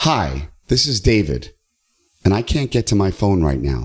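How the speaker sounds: pitch falling at ends of David and now. Practising a voicemail greeting with downturn intonation; falling pitch at phrase ends, now. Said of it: "Downturn, right?".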